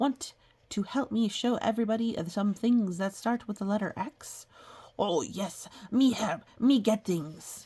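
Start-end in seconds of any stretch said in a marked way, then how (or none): 5.0-7.7 put-on furry monster voice. Voicing a reply to an invitation to help with the X page: Cookie Monster voice. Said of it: "Cookie Monster, here we are on the X page".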